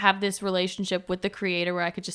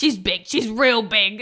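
imitated raspy Long Island accent, louder; 3 semitones higher, 8 dB louder than usual. Retelling what a manager said, imitating raspy Long Island smoker voice. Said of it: "very raspy smoker voice".

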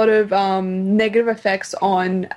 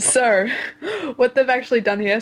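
chuckling mid-sentence, laughing through the words; 3 semitones higher than usual. Explaining what researchers found about fish, laughing at own joke. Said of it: "I'm laughing at my own joke".

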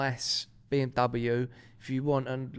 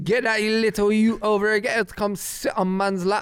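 loud, raised, put-on Jamaican patois through a voice box; 8 semitones higher, 6 dB louder than usual. Joking about a robot voice box, the speaker does Stephen Hawking voice in Jamaican patois. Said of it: "programmed his little voice box to be like Jamaican patois".

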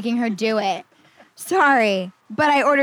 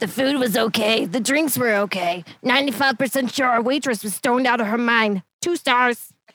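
put-on old smoker's voice. Reading an online restaurant review aloud, in a grandma's smoker voice. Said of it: "that's exactly my grandma's smoker voice".

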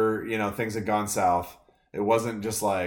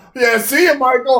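play-acted, pissed-off shout, high, booming, drawn-out; 11 dB louder than usual. Retelling how a man finally got pissed and took off: imitating someone angrily leaving. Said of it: "finally he gets pissed".

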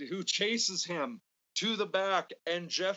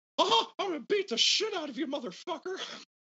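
mock-angry, high-pitched cartoon voice; 11 semitones higher than usual. Describing Butterbean's angry voice as Mickey Mouse-like, Butterbean angry voice impression. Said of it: "Butterbean's angry voice is Mickey Mouse, is just, I'm fed up with everything... sort of voice. Like".

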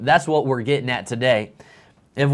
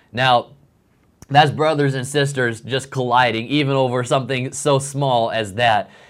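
normal talking voice

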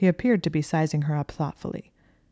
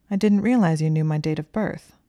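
ordinary delivery, nothing marked

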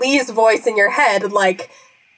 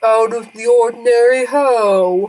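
deep, bassy sea turtle voice with "ho" drawn out. Playing a sea turtle asked if anything odd happened last night, bassy sea turtle voice. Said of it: "a sort of bassy voice is like".

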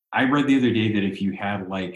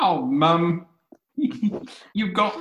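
put-on British child voice, higher pitch; 8 semitones higher than usual. Retelling what a little kid said to his mom, imitating a British kid. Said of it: "they were British".

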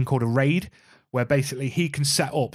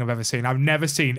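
ordinary delivery

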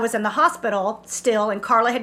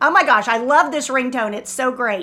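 ordinary talk

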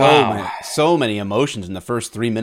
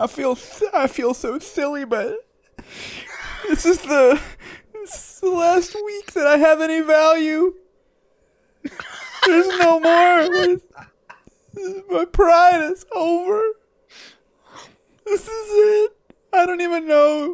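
mock crying, fake sobbing. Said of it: "Are you crying".

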